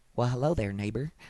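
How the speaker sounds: gentle, soft, neighborly tone, voice dropped low. Showing the greeting you missed in a commercial, as a Mister Rogers impression. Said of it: "that was a good mister Rogers, right?".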